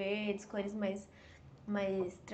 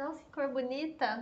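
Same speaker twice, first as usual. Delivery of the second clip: ordinary talk, nothing marked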